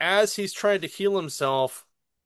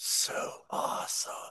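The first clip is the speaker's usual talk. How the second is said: soft, slow, awestruck hushed whisper. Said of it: "Lorzod's just like".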